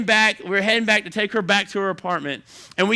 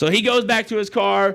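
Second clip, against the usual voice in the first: normal talking voice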